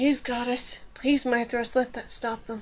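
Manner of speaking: hushed whispering. Numer prays to the goddess and Mithras as the crack seals, whispered. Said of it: "whispered Numer".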